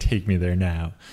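put-on, mock-aggressive, forceful tone. Acting out what a woman says she wants, imitating an aggressive demand. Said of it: "this is a very aggressive version".

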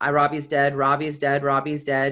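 ordinary talk

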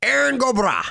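put-on, very high-pitched Irish accent. Saying a name after facts about Irish Americans, put-on Irish accent. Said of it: "that's Irish. ... That was my Irish".

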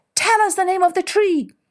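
very high, animal-like voices shouting together. The animals call out to Elephant as she skids into their midst, shouting. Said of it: "all the animals who shouted".

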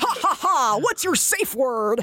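slow, drawn-out, horrible-sounding character voice. Mocking a voice actor's game character: imitating Iron Bull's voice. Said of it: "he does a voice like this".

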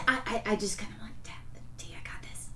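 unvoiced, very soft whisper.

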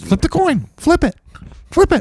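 squeaky voice swooping wildly in pitch. Showing friends how a book character sounds, launch into a bad Mickey Mouse voice. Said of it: "That's Mickey Mouse".

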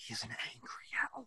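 hushed, theatrical stage whisper. Retelling a film scene after a long pause: imitating Buddy's stage whisper. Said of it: "other stage whisper goes".

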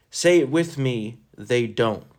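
ordinary talk

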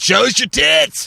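play-acted very high, creaky, rough heckler yell. Acting out a heckler in a theater audience: imitating a heckler yelling. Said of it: "yells out".

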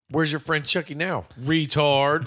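put-on condescending, jeering tone. Retelling a movie line that was not said casually: imitating a condescending taunt. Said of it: "you condescending fuck".

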